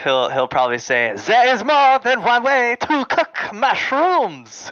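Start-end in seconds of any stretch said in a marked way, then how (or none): 1.3-4.7 put-on indignant French accent, very high-pitched. Speaker acting out what a man will probably say, in his French accent. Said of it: "in his French accent".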